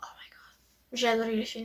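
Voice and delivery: soft, excited, gushing whisper.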